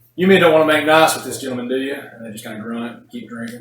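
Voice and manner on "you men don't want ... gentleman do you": big hearty booming voice, pitched up, very loud. The narrator voices a character calling over to a group of dwarves, booming. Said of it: "he just booms over there".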